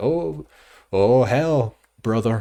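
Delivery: very loud, very slow, drawn-out bad fake American accent. Mimicking people on Twitter reacting to Article four: bad American accent. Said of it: "I'm doing a bad impression of an American on Twitter now".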